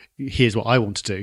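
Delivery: ordinary talk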